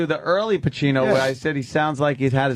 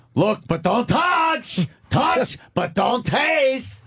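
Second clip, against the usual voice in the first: very high, drawn-out yelling; 10 semitones higher than usual. Doing a line from Devil's Advocate as Al Pacino, yelling.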